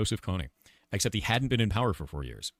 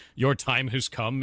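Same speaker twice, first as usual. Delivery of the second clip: huge, shrill, giant screech; 5 semitones higher, 4 dB louder than usual. Retelling a voicemail left by callers: imitating a giant screeching voice. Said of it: "like, a giant screeching voice".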